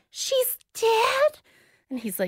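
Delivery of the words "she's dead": play-acted very high, hammy princess-style disbelief. Retelling a suspect's badly faked reaction to news of a death: imitating badly acted shock. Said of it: "she's really bad".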